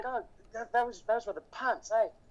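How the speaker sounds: put-on English accent. In a casual chat, the speaker slips into a put-on English accent. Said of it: "pretend to do an Australian or an English accent".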